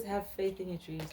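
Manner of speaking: plain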